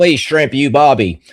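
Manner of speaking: put-on Australian or English accent. Joking about telling Australian and English accents apart: mock Australian or English accent. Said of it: "an Australian or English accent".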